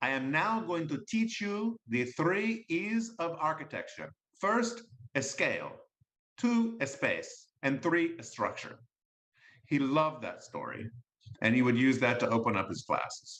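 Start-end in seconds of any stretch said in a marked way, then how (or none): 0.0-8.8 very bad put-on Argentinian accent, sing-song. Quoting a professor's famous line from class, in the speaker's worst Argentinian accent. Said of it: "I'll do this in my worst Argentinian accent".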